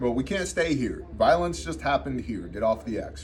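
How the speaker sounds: ordinary talk, nothing marked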